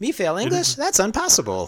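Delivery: very high, loud voice with big pitch swoops. Quoting a favorite line to the other speaker, in Ralph Wiggum voice. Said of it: "That's a good Ralph".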